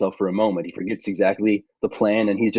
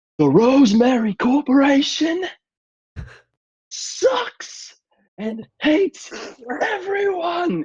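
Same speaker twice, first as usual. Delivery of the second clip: very high, swooping, drawn-out yell at maximum effort. Voicing a character addressing a crowd from a stage: shouting as loud as he can. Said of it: "he shouts as loud as he can".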